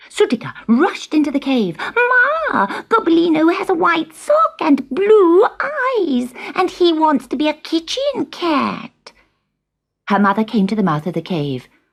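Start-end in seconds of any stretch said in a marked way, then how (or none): 1.8-9.1 very high, slow, eager, self-important voice. A young animal hurries to tell its mother about a brother and what he wants, importantly and eagerly. eager, tattling.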